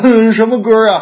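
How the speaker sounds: put-on high, loud, sulky little girl voice. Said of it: "我妹说".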